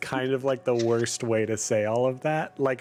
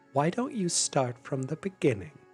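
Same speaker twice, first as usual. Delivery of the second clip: very calm, composed, quieter and faster; 2 semitones higher, 4 dB quieter than usual. Narrating the other mom turning to the listener to ask, very calm voice. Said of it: "says in a very calm voice".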